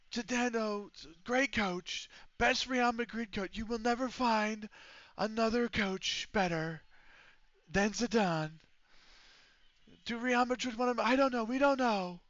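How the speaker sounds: tight, strained high voice. Doing a put-on voice the speaker admits sounds constipated, strained, constipated-sounding put-on voice. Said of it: "it slightly sounds like I'm constipated when I use this voice".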